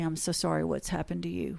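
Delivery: very quiet, soft delivery. Retelling what a woman said when the two of them were alone, retelling a quiet remark. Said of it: "she said very quietly".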